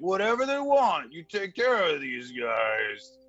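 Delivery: calling out loudly. Voicing a character calling an order to the bartender: shouting to the bartender. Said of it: "and he shouts to the bartender".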